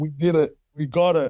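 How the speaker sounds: words spoken through tears, crying voice. Retelling a partner's phone call with news of certification: imitating someone crying. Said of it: "she's crying".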